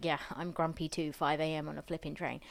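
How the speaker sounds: usual speaking voice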